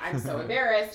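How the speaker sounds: plain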